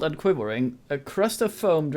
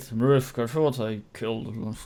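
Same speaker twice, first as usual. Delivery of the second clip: low, indifferent, barely bothered, apathetic mutter; 5 semitones lower, 3 dB quieter than usual. Mocking how the character Grigna said the line: muttering in a half apathetic state. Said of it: "muttered Grigna in a half apathetic state".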